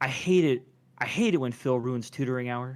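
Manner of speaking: low, deep, womanly oracle voice. Voicing a magic eight ball's answer: deeper female voice. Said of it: "you hear kind of a deeper female voice".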